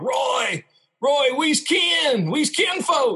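put-on yelling. Retelling a guy yelling to someone to come sign his ball; retelling someone yelling. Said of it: "But he's yelling, he's saying".

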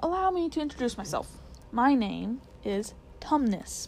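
ordinary talk

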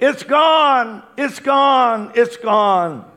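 slow, loud, high, drawn-out yelling. Retelling how Sister Karen came back into the auditorium: imitating someone yelling. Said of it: "she was yelling".

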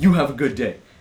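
acted, hostile, angry, very loud aggression. Retelling snapping back at a rude customer: imitating an aggressive angry tone. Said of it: "very aggressive and angry".

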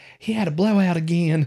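high, mocking put-on voice sending up someone's speech. Retelling what the other speaker said about the baby: imitating partner's voice. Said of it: "I do not sound like that".

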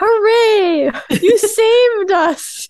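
very high, hammy, drawn-out loud cheer. Imitating a loud woman in a movie crowd cheering: imitating a really loud crowd woman. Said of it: "that really loud woman who's just like".

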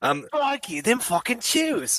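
bad British accent sounding Australian. Asked to do a British accent on the spot: bad British accent, sounding Australian. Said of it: "that came out of Australia".

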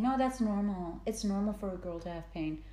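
usual speaking voice

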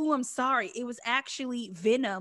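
all-knowing, unsurprised, matter-of-fact tone. Imitating a quiz host correcting an answer: imitating Alex Trebek, all-knowing tone. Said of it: "every time he'd be like".

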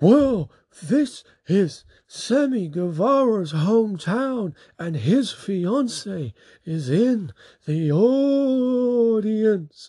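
very high, slow top-of-lungs shout, "audience" stretched. Retelling a commentator's sudden remark during a match: imitating Excalibur shouting. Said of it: "Excalibur shouts at the top of his lungs".

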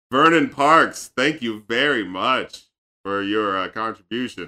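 mocking low tone. Reading out a Patreon request and thanking the contributor, sarcastic thanks. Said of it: "I've never heard you sound more sarcastic in your whole thanks!".

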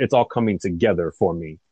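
ordinary delivery

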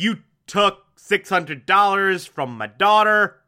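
ordinary delivery

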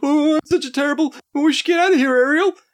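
very high, loud, terrified little voice. Mocking a cartoon fish from the film: terrified Flounder voice. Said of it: "this terrified little".

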